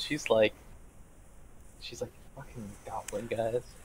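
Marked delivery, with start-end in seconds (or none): 2.3-3.6 acted revolted, thoroughly disgusted tone, quieter. Voicing Cap Plus reacting to goblins: thoroughly disgusted. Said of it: "Cap Plus is thoroughly disgusted".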